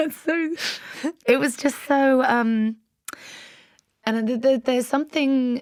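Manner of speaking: high voice, choking up, close to tears. Recalling what was said on a first date, close to tears. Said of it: "I'm gonna cry".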